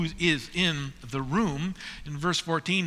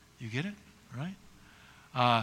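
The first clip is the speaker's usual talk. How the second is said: ordinary delivery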